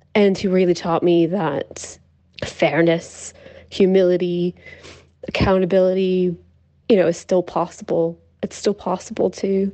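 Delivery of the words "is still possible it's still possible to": overcome, emotional voice, words trailing off. Speaker describing what he taught them, getting emotional. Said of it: "I'm just getting emotional".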